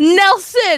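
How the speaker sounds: very high-pitched, shrill, loud yell. Interrupting the other speaker by shouting a name into the mic: yelling into the mic. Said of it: "Don't yell into the mic".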